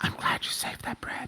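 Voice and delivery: close, breathy, soft whisper. The game narrator voices a woman hugging the player's character, whispering in their ear. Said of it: "she just whispers in your ear".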